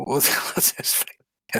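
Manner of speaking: acted whisper, under the breath.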